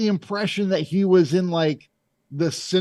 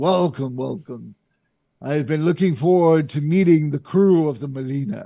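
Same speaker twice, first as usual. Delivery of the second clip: big, grand, showy host-style voice; 2 semitones lower than usual. Game master voicing a man who welcomes the crew of the Melina, booming voice. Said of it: "you also hear his booming voice".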